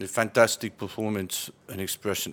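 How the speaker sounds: deadpan, utterly bored, flat monotone drone. Asked to do a Jose Mourinho interview, mock-bored Jose Mourinho impression. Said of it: "You have to sound really bored".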